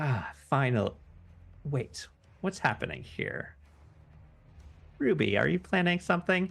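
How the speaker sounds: high, feminine voice. Describing the scene, the speaker voices a feminine voice from the darkness. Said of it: "you hear this uh, feminine voice saying".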